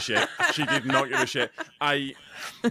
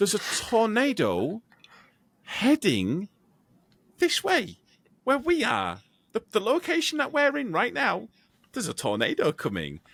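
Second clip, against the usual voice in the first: mock unbothered, calm, matter-of-fact, pitched up; 8 semitones higher than usual. Retelling how she announced a tornado: imitating someone saying it calmly. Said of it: "she said it so calmly, so matter-of-factly".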